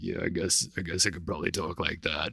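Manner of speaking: low, soft, croaky voice. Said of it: "Can you do a good bat voice for us?".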